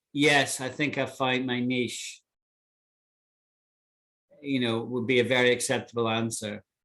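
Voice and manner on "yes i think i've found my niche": plain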